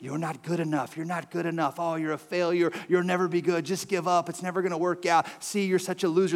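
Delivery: put-on whispering tempter voice. Voicing the enemy whispering shame to a listener: put-on whispering voice of Satan. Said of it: "the voice of the enemy whispering to you".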